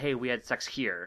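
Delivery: ordinary talk, nothing marked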